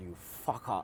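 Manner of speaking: low, soft cursing under the breath. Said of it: "I was like".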